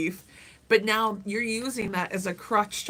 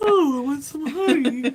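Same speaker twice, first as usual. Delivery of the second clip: hammy storybook cartoon bear voice, high and loud; 6 semitones higher, 7 dB louder than usual. Taking up the suggestion to go Pooh Bear, in a deep Pooh Bear voice. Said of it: "You are going Pooh Bear".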